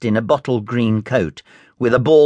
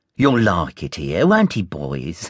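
scornful sneering, much lower; 6 semitones lower than usual. A man greets a newly arrived boy in front of the other boys, sneering.

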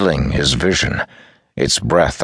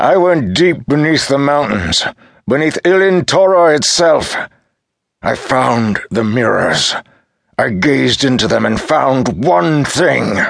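very high, furious, enraged roar; 10 semitones higher, 4 dB louder than usual. Reading Talcamar's line as years of rage are finally released, shouting in rage. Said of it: "Now he shouted, the rage of so many years finally released".

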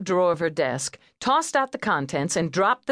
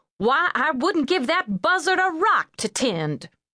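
scornful, disbelieving huff, pitched up; 9 semitones higher than usual. Reading Letty reacting to Charlotte handing over her niece, huffing incredulously. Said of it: "Letty huffed incredulously".

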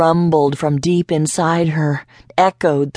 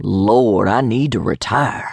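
mumbled, very low-pitched; 7 semitones lower than usual. A bus driver, handed a passenger's ticket, mumbles to himself. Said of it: "He mumbled".

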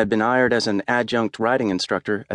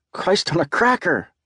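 spooked, startled, pitched-up yelp of fright; 8 semitones higher than usual. Jim, sneaking back upstairs, is surprised by someone calling his name, startled yell. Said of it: "I yelled".

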